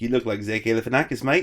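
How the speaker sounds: horrible, bad put-on Australian accent. Retelling what the hotel owner said as they left, horrible australian accent. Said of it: "that's my horrible Australian accent".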